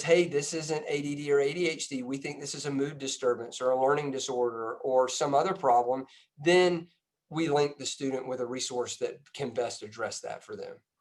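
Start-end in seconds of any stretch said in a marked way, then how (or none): none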